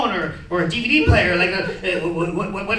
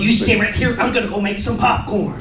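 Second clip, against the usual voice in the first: ordinary talk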